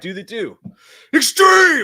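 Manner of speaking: shouting. Waiting for a trailer with a live chat, yelling. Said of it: "Sorry for yelling".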